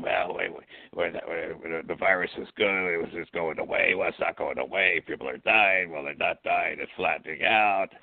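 scratchy, raspy throat. Mocking a public health official's changing statements: imitating Fauci's scratchy voice. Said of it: "with his scratchy voice saying".

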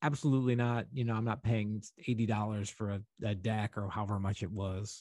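normal talking voice

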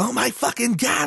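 very high, thrilled squeal, blurted out, put-on. Acting out a YouTuber's unboxing of an early PlayStation, imitating Francis, very excited. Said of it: "he's very excited".

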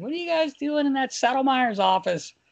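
very high-pitched, needling voice. Retelling what a coach said at the door: imitating Hitch's high-pitched voice. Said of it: "he's got the high-pitched voice too".

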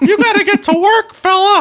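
very high, squeaky cowboy drawl. Speaker riffs during a comedic exchange, in a Mickey Mouse meets John Wayne voice. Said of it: "Sounds like Mickey Mouse meets John Wayne".

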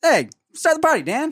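rough, very high, put-on New York accent. Speaker retrying the line after being told they lack the timbre, rough New York accent. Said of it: "rough, like New York".

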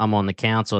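normal talking voice

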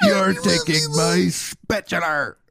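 high, slow, drawn-out pirate captain voice.

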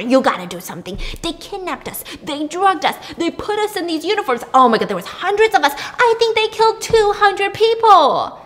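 put-on high, rising yell. Retelling how a man yelled at a uniformed officer: imitating someone yelling. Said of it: "he's yelling at this uniformed officer".

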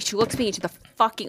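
ordinary talk

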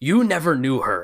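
loud, ferocious, growling snarl of speech. Voicing a grieving lord answering a pleading priest: ferocious growl. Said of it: "in a ferocious growl of speaking".

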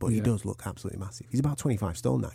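hushed whisper. Speaker talking about a man in case he is listening, whispering. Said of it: "I'm whispering".

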